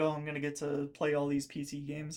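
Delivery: plain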